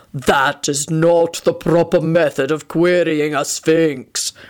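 deep, low, rumbling, menacing, malevolent voice. A narrator voices a sphinx answering the group's question: deep malevolent rumble. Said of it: "rumbled a deep, malevolent voice".

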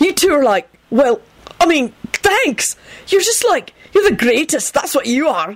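very high, delighted, gushing, tripping over words. A narrator reads Benji thanking two people for their offer, delighted babbling. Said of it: "he finished delightedly".

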